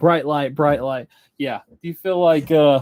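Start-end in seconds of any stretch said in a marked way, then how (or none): none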